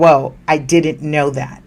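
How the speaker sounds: ordinary talk, nothing marked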